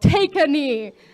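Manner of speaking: sudden, loud, high-pitched yell. Retelling pranking a friend with a water bottle: retelling own yell. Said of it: "And I yelled".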